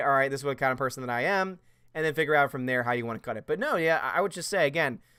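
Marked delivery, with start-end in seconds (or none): none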